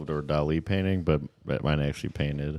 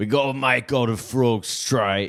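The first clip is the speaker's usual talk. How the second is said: loud Cockney accent, pitched high, acted; 8 semitones higher, 6 dB louder than usual. Doing an Elon Musk impression in an East London Cockney accent. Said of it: "my Elon impression is just gonna be East London Cockney accent".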